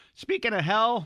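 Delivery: voice cracking. Discussing movies with another speaker, voice cracking. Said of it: "I don't know why my voice is cracking so".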